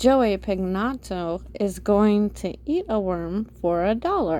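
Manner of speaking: ordinary delivery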